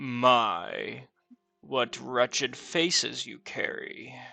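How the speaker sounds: slow, gravelly voice, drawn-out "my". Voicing a voice from the darkness insulting the party: gravelly voice. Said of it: "the voice is kinda gravelly".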